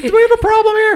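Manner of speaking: pitched very high and strongly projected. Speakers discussing Mickey impressions, one doing a South Park Mickey Mouse voice. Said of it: "South Park Mickey is the best".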